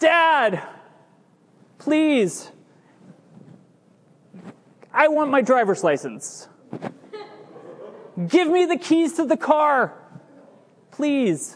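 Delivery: high, pleading, begging hard. A father acts out his daughter asking him for the car keys, acting out a begging plea. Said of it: "I'm begging you".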